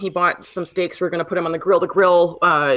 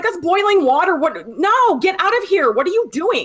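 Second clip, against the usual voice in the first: shrill, very high, shrieking outcry; 11 semitones higher than usual. Recounting someone interfering while the speaker was cooking, retelling a scream. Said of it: "I'm just like screaming".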